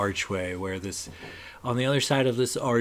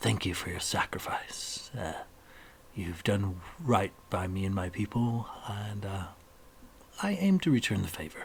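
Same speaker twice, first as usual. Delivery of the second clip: soft, hushed, close and private whisper; 2 semitones lower, 5 dB quieter than usual. As a character shaking Renwick's hand and pulling him close, whispering. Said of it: "he whispers it to you".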